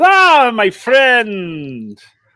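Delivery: high, loud, swooping, sing-song cartoon goose character voice. Voicing Gustav after he falls onto the balcony: Gustav voice. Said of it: "And he goes".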